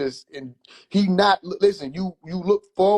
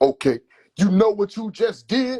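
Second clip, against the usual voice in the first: put-on dramatic, showy, pitched-up older man voice; 6 semitones higher, 3 dB louder than usual. Imitating his older uncle confronting him after he did something, theatrical older uncle voice. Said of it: "he gotta be theatrical and shit".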